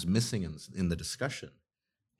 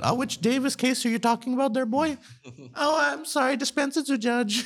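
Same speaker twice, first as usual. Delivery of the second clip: put-on squeaky, very high child voice; 4 dB louder than usual. Acting out a joke about a case before a judge, generic lawyer child voice. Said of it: "my sort of generic lawyer child voice".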